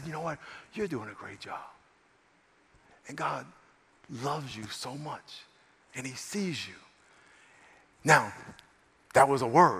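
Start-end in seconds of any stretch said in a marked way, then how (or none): 0.0-6.7 very quiet, soft, hushed, almost half-whisper. Retelling leaning toward a flustered woman to speak to her: retelling an almost-half-whisper. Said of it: "I just leaned forward and almost whispered".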